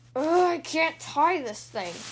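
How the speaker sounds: loud, grumpy, grumbling growl. Narrator reads Brother, unhappy about wearing a tie, as he growled. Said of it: "he growled".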